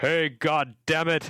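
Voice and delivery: put-on high, drawn-out, bossy, commanding childlike exclamation. Retelling his six-year-old self playing Mario, retelling a loud commanding exclamation. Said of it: "exclaimed in a loud, imperative voice".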